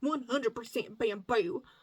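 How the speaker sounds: Southern US accent slipping out. Describing yarn, repeating a phrase that slipped out in a southern accent. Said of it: "Did you hear my southern accent come out there?".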